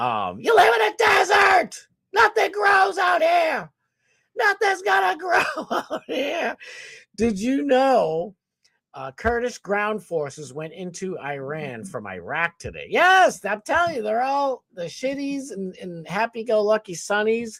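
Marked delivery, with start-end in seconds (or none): 0.4-6.6 very high put-on stand-up comedian voice. Doing an impression of Sam Kinison's desert bit: Sam Kinison impression. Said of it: "I can't even do his anymore".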